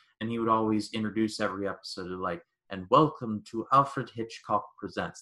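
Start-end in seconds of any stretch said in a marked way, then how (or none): 2.7-5.2 bad, weak put-on British accent. Acting out how he introduced every episode, as Alfred Hitchcock in a non-existent British accent. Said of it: "my non-existent British accent".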